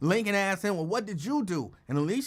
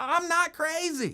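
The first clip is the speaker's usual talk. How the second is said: mock, high, shrill, full-out frantic yelling; 9 semitones higher than usual. Retelling how a woman ran out of the building: imitating someone screaming.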